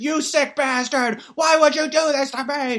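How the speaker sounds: very high, shrill, loud yelling through sobs. Retelling a film scene, a man yelling at his father: retelling a sobbing yell. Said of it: "he's like yelling at the".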